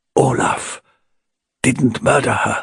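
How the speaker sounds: speaking in a low voice. Tord replies to the one questioning him, in a low voice. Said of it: "said Tord in a low voice".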